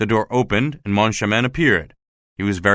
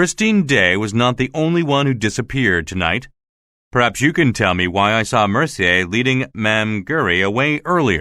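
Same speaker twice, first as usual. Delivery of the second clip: usual speaking voice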